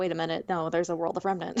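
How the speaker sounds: ordinary talk, nothing marked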